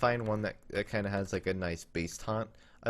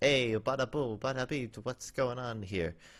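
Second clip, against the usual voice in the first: bad, over-the-top, exaggerated fake Italian accent; 3 semitones higher than usual. Moving an on-screen puppet's hand for the camera: bad Italian accent. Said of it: "I don't know why I'm talking like that".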